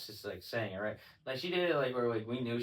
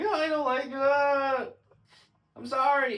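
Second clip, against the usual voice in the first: put-on crying voice, higher and louder; 8 dB louder than usual. Retelling Micah crying while doing push-ups: imitating Micah crying. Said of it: "crying, but just busting out push-ups".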